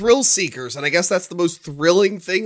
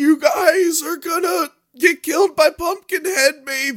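imitated old woman voice, much higher; 10 semitones higher than usual. Retelling a scene from pumpkinhead, quoting the old lady, imitating an old lady. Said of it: "the old lady's all like".

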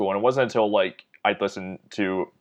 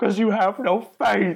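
anguished, very high, cracking voice; 12 semitones higher than usual. Recalling a movie moment after Paxton kills the sheriff, do a Paxton impression, voice cracking. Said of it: "his voice is, like, cracking".

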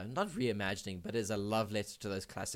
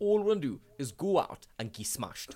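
put-on northeast English Geordie accent; 5 semitones higher, 5 dB louder than usual. Showing the trigger phrase used to slip into a Geordie accent. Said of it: "my like trigger phrase to get into the Geordie accent is saying".

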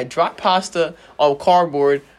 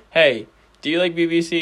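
ordinary talk, nothing marked

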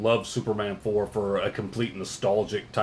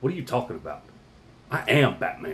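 completely serious, straight-faced delivery. Retelling an interview answer, imitating Michael Keaton in total seriousness. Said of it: "just in total seriousness went".

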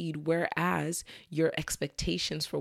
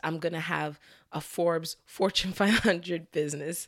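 speaking through laughter. Listing unrealistic hopes for a business, laughing while talking. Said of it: "Sorry for laughing".

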